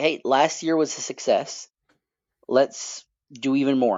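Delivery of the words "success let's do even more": normal talking voice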